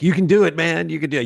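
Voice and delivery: mock excited cheering yell, high and loud. Retelling cheering on a friend at the screen: retelling own yelling. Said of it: "I'm yelling at the screen".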